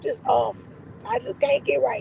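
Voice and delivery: nearly lost voice. Greeting the others while recovering from being sick: sick voice, almost gone. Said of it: "your voice had left".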